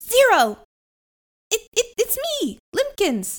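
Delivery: put-on high, slow little-boy voice. Narrator voices a tiny boy speaking up from the back: Limpkins' little voice. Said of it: "you hear this little voice from the back".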